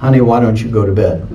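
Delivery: gentle, soft, very low voice. Retelling what he hears after dozing off near bedtime, soft voice. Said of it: "I'll hear this soft voice that says".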